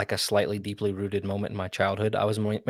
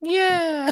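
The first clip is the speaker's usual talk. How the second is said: squeaky voice pitched way up high; 3 dB louder than usual. Asked to redo the line, saying yeah: Mickey Mouse voice. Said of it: "in my best Mickey Mouse voice".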